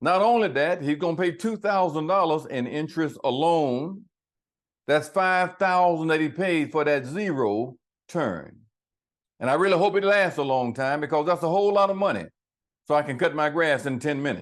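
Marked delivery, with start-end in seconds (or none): none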